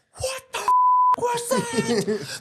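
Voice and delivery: play-acted very high, wild, drawn-out, swooping scream. Retelling a director reacting to an improvised line: imitating Errol Morris screaming. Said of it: "just screaming, uh, like, at the top of his lungs".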